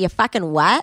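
put-on Liverpool accent. Retelling what a Scouse contestant says to others: imitating a Scouse accent. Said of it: "she's the only Scouse bunny".

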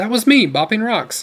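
bright laughing delivery. Sam answers his companion in the woods, laughing suddenly and happily. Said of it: "Sam laughed suddenly, happily".

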